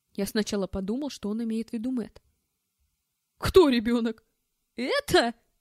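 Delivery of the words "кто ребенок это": loud, jeering, gleeful, gloating howl. A narrator reads an armed man's reply in a novel: gloating howl. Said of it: "Злорадно взвыл Тенгиз".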